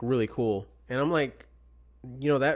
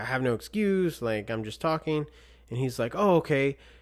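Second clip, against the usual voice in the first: ordinary talk, nothing marked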